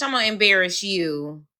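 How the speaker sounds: usual speaking voice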